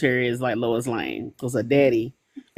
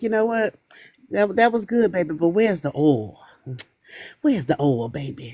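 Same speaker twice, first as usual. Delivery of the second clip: put-on old person voice, higher pitch; 5 semitones higher than usual. Quoting how the old folks at church used to say it: imitating old church folks. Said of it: "how the old folks, uh, used to say it at the church".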